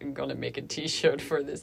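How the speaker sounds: jaded, cynical, sneering aside voice. Quoting an inner voice that scoffs: imitating a cynical voice. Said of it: "cynical voice that says".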